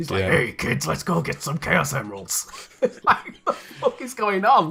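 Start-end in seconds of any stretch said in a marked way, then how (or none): 0.2-2.5 voice of a lifelong heavy smoker. Recalling Sonic Adventure on the Dreamcast, mocking a character's voice: Knuckles as a heavy smoker. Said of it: "sound like he's got an 80-a-day habit".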